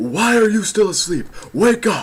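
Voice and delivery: very high-pitched, loud yelling creature voice. Voicing a game character telling the player to wake up: yelling Loudred voice. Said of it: "that's the character why I'm yelling".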